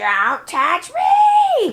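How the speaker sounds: shrill, crazed villain shriek, long drawn-out "me". Recapping a cartoon, the speaker retells a character screaming in crazy Cobra Commander voice. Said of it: "crazy Cobra Commander voice".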